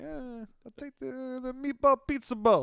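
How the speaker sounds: put-on Italian-American accent. Acting out ordering the dish while moving one hand: mock Italian-American accent. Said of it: "So you're like".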